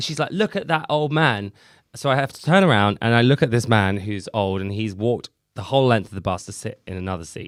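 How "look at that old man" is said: screaming with pitch raised high. Retelling how a bus driver screamed about a priority seat: imitating someone screaming. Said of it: "this woman starts screaming at me".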